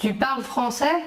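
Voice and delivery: pitch climbs on français like a question tune. French lesson on intonation-only questions: rising pitch on 'français'. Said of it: "l'intonation ascendante".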